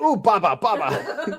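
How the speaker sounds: put-on, high, overly excited voice. Retelling how a daughter reacted: imitating overly excited daughter. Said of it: "overly excited".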